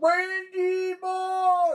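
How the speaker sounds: play-acted very high, full-throated, shrill announcer yell. Complaining about YouTube commercials, the speaker mimics the people in them, imitating their yelling. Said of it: "they yell at the top of their lungs".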